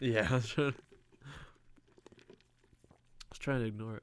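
hiccuping while talking. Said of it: "You got the hiccups now?".

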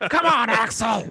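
put-on gargled-gravel, movie-tough voice. Doing an impression of Nick Nolte playing a gruff cop. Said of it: "That's how he sounds".

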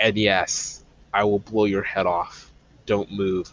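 low, slow, overdramatic theatrical voice, every word dragged. Host discussing the show's genre drops into a Mandalorian impression. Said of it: "that was my mandalorian impression".

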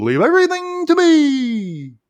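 very high, loud, sing-song swooping frog puppet voice, stretched. Retelling a cartoon where a character finds the president stuck, Kermit-like voice. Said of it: "I kind of sound like Kermit when I say it like that".

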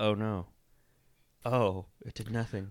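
mock stoic, unmoved deadpan, low and flat. Acting out someone's shocked reaction, imitating a stoic reaction. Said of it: "very just kinda stoic".

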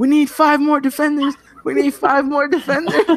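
put-on, very high, frightened holler. Retelling a defender yelling over to his coach, imitating a yell. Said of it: "yells at the coach".

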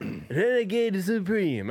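high, put-on Hungarian accent that sounds Russian. Repeating a phrase for a co-host, in a mock Hungarian accent. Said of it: "I guess in Hungarian".

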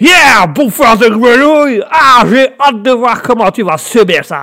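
put-on American accent. Speaker introduces characters helping with English, then speaks as the American: as the American character. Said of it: "l'Américain qui serait là".

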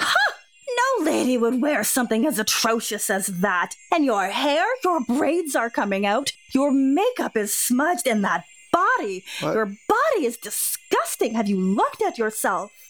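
put-on contemptuous, scornful, haughty, sneering voice. Speaking to someone who claims to be lady of the house; haughty, sneering character voice.

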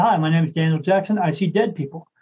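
ordinary talk, nothing marked

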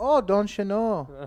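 put-on Spanglish accent. Retelling how they answer a telemarketer: put-on Spanglish accent. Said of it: "And then you go to some kind of Spanglish?".

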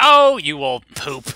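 brash, shrill, very loud, drawn-out delivery. Describing how a film's characters speak: loud shrill Martha imitation. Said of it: "very loud, very brash, very, uh, shrill".

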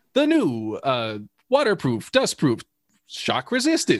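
mock old commercial announcer voice, swooping and sing-song. Describing sampling old watch ads: sing-songy Timex ad copy voice. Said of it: "all that sing-songy kind of, like, ad copy voice".

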